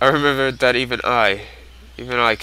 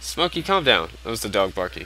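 ordinary talk

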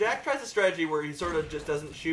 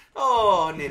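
loud, sudden put-on Irish accent; 8 dB louder than usual. Echoing a word in back-and-forth banter with the other speaker: irish accent. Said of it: "Are you Irish now?".

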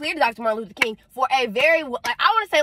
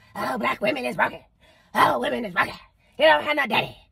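rough, creaky, monstrous demonic voice. Mocking the people who call women broken, in a demon voice. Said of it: "that's my demon voice".

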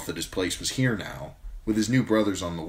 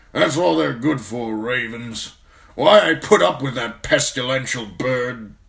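loud, raised, grousing grumble; 5 semitones higher, 7 dB louder than usual. Watching a raven flap away across the chamber, grumbling. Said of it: "Mormont grumbled".

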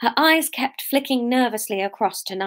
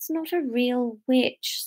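slow, tired, worn-out, weary delivery; 2 semitones higher, 4 dB quieter than usual. Beryl answers Nigel's claim about the witch: weary. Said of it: "said Beryl wearily".

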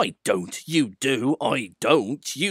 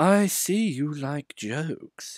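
slow, oily, oozing voice; 4 semitones higher than usual. Diesel speaks to the trucks the next day: Diesel's oily voice. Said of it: "he said in his oily voice".

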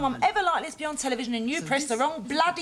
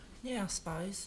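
very quiet, flat, unenthusiastic voice; 6 semitones lower, 11 dB quieter than usual. Answering when asked if the good news is great, not too happy. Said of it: "You don't sound too happy".

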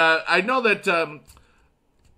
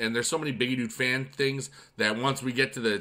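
ordinary delivery

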